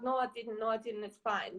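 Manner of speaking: mock fearful, timid voice. Retelling her own denial to an accusing partner: imitating her own scared denial. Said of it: "someone scared, who's scared of him".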